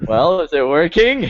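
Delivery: pitched way up and stretched. Mocking another player's line: Hillary Clinton impression. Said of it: "he sounds like Hillary about the hot sauce thing".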